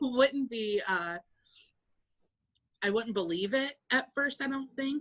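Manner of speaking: high, tearful crying voice, breaking up. Imagining getting the donor phone call, crying, voice breaking. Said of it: "I'm I'm crying now".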